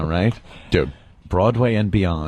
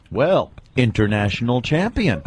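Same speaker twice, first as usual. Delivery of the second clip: usual speaking voice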